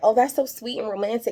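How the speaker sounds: put-on choked-up, welling-over gushing. Retelling a woman's reaction to a plan to propose: imitating someone choked up. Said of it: "She's getting all choked up like".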